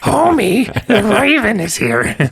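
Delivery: very high, swooping, stretched-out cartoon woman voice. Joking about the other speaker's voice: Marge Simpson voice. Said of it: "That's Marge Simpson".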